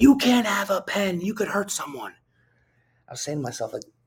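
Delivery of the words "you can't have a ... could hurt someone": very high, shrill screaming voice. Retelling how a nurse reacted to a pen: imitating a screaming nurse. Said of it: "starts screaming at me".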